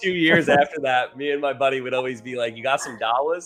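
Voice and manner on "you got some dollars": mock heavy accent, L sounded as W. Speaker and a buddy kept mimicking a man's big accent: mock accent, W for L. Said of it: "he had a big accent... instead of like an L, he put a W".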